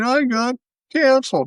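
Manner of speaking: tearful, high-pitched crybaby whine, crying. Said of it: "now he's crying and going on the internet".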